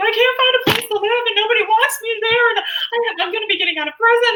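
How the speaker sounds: play-acted panicked outpouring, very high and loud. Woman retells what she told a coworker who asked why she was crying, retelling being frantic.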